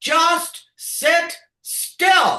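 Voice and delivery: acted high-pitched holler, very high. Retelling yelling up to boys stuck on a Ferris wheel: retelling her own yell. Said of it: "And I'm yelling".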